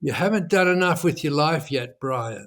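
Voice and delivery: utterly placid, really calm, even tone. Retelling what an outside voice said to the speaker: retelling a very calm voice. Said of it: "in this really, really calm voice".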